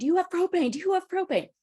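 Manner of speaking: very high, frantic, rushed panicked screaming. Retelling a sister's panicked phone call about propane: imitating sister's panicked scream. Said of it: "panicked phone call from my sister who's screaming".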